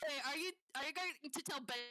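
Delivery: ordinary delivery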